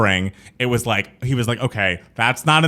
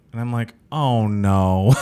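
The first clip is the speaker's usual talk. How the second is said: ordinary delivery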